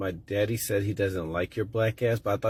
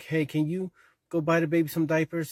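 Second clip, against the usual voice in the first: put-on little girl voice, pitched higher; 8 semitones higher than usual. Retelling two kids' dramatic play, imitating a little girl in pretend play. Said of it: "the little girl was like".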